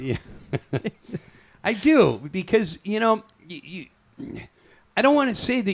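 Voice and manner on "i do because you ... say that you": very high voice, stammering, tripping over words, false starts. Back on the Dag Show, trying to say something to Neil, stuttering. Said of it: "Why are you stuttering?".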